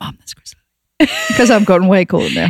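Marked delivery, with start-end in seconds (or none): 0.0-1.1 hushed whisper, under the breath. Retelling spotting someone in the street: whispering under breath. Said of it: "quietly whispered under my breath".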